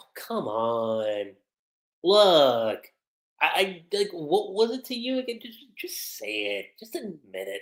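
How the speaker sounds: slow, playful coaxing with "come on" drawn out. Retelling an anime scene where Juvia teases Grace: imitating Juvia's playful tone. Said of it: "she's doing it in a real playful way".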